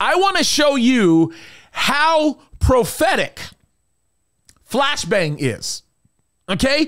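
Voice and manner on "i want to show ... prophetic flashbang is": very heavy sarcasm, laid on thick, swooping and slow. Introducing a video clip to another speaker: very sarcastic. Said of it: "I'm being very, uh, sarcastic when I say this".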